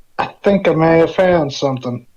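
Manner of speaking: put-on American Southern accent. A character in a role-play reporting a find in the records, southern accent. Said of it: "the southern accent is infectious".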